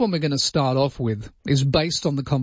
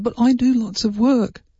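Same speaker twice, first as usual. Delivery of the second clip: high, loud, mock indignant put-on voice. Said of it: "He said".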